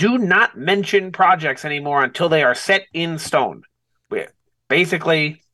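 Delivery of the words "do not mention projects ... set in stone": ordinary talk, nothing marked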